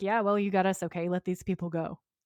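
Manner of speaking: usual speaking voice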